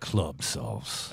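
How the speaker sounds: deep, low, breathy, whispered announcer voice. Announcing a name as it comes in, low deep announcer voice. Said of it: "you need a low tone for that".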